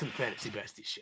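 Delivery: very quiet, breathy, barely voiced whisper. Showing how Batman talks while introducing the show, Batman voice. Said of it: "That was perfect".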